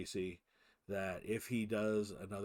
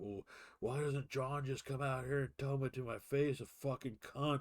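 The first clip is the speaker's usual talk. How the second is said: put-on high, drunken screaming rant; 5 semitones higher than usual. Retelling being kept up at night, the speaker imitates drunk George screaming. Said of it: "George's drunken ass just screaming".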